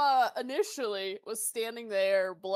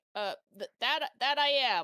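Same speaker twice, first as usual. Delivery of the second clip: awkward, flustered, embarrassed and hesitant. Voicing a grandma character asked if she is a grandma: awkward, flustered. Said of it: "she's kinda, like, awkwardly clears her throat".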